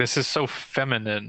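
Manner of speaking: normal talking voice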